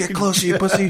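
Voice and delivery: piercing, shrill, very high-pitched scream. Retelling how the captain on the boat yelled at him: imitating the captain screaming. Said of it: "screaming at me".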